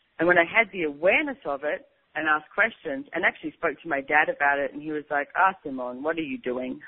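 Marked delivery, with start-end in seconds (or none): 5.4-6.8 put-on speaking with Lithuanian accent. Simone retells her father's reply when she asked him about it, imitating his Lithuanian accent. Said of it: "That's his Lithuanian accent".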